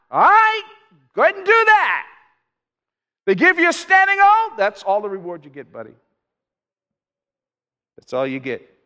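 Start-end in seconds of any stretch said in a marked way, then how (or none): 0.1-4.5 swooping high-pitched shouting. Retelling what someone shouts out at the Pharisees and religious actors: retelling a shout. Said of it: "and he shouts out".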